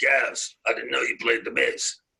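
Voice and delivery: gravelly voice, full of gravel. Retelling what a man said to him in his studio, imitating his gravelly voice. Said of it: "in his gravelly voice".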